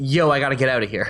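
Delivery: ordinary delivery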